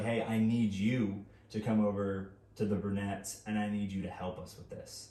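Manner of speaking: usual speaking voice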